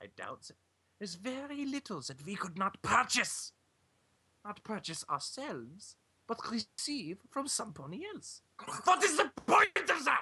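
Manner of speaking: put-on German accent drifting into French. Voicing a character in a group scene: German accent slipping into French. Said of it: "My German accent keeps going French".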